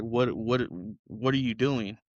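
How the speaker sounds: crying, broken-down outburst. Speaker recalling seeing their own dirty clothes and skin, retelling a crying breakdown. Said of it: "I broke down crying like".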